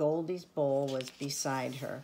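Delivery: plain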